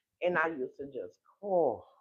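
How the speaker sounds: ordinary talk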